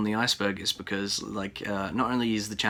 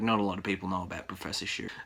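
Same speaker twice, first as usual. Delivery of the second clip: normal talking voice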